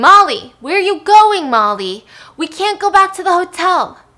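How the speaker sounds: high, very loud screaming call. Retelling him screaming after Molly as she walks off, screaming. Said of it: "And he's screaming".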